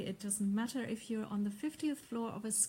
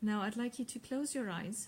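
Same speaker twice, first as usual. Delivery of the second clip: plain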